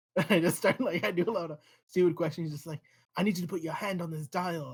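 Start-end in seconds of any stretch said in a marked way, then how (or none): 2.5-4.7 put-on man's British accent. Retelling what a man said to him, in a put-on british accent. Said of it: "he has a British accent. I can't stop doing it".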